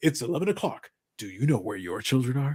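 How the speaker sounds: ominous, creepy late-night TV announcer voice. Quoting a local network commercial from western new york, creepy announcer voice. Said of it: "creepy voice man".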